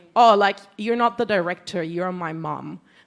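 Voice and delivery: self-important voice. Retelling what crew members say to the director: imitating an entitled tone. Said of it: "kinda, like, entitled".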